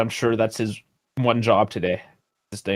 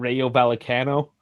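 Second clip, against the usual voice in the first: words pronounced in an American accent. Showing how to say the club name in American: American accent on "Rayo Vallecano". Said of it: "That's how that's how to say it in American".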